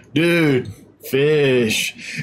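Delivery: slow, drawn-out surfer dude voice. Reading out a viewer's question about a fish, in a surfer dude voice. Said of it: "I just have a surfer voice hit my head".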